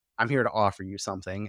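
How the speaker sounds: ordinary talk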